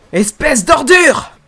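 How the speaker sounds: all-out scream, very high-pitched and very loud. Dubbing an anime scene, a line that must be screamed: shouting in character. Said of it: "Faut que je dise plus en criant".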